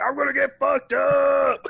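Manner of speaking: very high-pitched, shrill, hoarse screaming yell. Retelling a shout on a dark early-morning plane: retelling own screaming. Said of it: "just screaming, yelling, just like".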